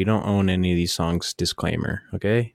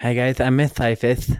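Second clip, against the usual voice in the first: put-on bad lisp, higher pitched; 4 semitones higher than usual. Imitating an English teacher introducing herself: imitating Miss Cyphus's bad lisp. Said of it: "She had a lisp, bad one".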